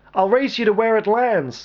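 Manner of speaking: wild shouted yell. Banshee yells to Mint over the uproar before diving from the aircraft: yelling with a wild grin. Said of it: "Banshee yelled at Mint over the uproar, grinning wildly".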